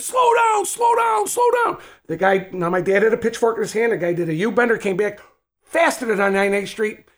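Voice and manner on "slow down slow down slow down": mock very high, hollered, repeated scream. Retelling his dad yelling at a speeding car from the lawn: imitating someone screaming. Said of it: "starts screaming".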